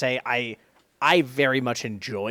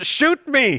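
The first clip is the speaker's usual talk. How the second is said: put-on screaming, higher and louder; 10 semitones higher, 6 dB louder than usual. Retelling what a teammate yells during play: imitating Plague screaming. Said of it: "Plague just screams".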